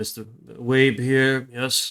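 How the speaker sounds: put-on rough English accent. Voicing a contact answering the phone: rough British accent. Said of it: "you hear his sort of rough British accent come up".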